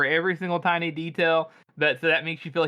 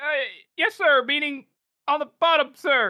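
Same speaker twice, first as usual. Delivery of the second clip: nervous, scared, flustered stammering sergeant voice, higher; 10 semitones higher than usual. Voicing a sergeant caught by a general and his staff: nervous stammering sergeant. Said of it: "I like to imagine this guy's like".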